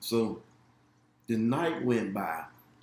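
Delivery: plain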